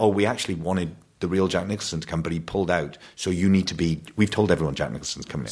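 ordinary delivery

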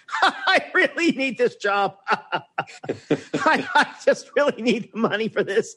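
put-on, high, very slow desperate laughing. Recalling someone's imitation of writing-staff laughter at a run-through, imitating desperate laughter. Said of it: "the desperate laughter".

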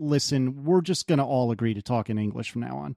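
ordinary delivery

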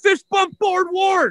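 put-on, shrill, very high-pitched screaming shout. Speaker recalls screaming at people as they came out the hotel doors, retelling a scream. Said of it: "I am literally just screaming".

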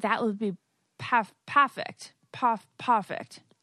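put-on accent from England.

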